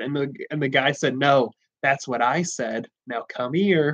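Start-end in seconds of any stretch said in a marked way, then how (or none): 1.2-4.0 really creepy, sinister, unsettling delivery. Retelling what the guy said after the pencil exchange, in a really creepy voice. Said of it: "in a really creepy voice".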